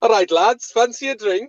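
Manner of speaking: amateur Welsh accent. Acting out what the other speaker will say to the English army: Welsh accent. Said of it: "was my Welsh accent any good".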